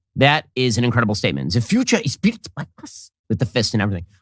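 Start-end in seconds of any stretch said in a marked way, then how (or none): 1.5-3.1 higher-pitched, mock thick Germanic accent. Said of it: "He also said this with a very thick Germanic accent".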